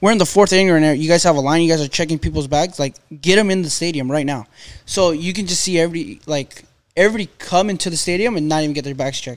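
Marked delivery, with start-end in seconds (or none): none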